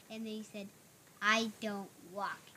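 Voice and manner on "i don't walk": mock annoyed bird voice, lower and quieter. Retelling a scene from a book, quoting the bird: imitating an annoyed bird.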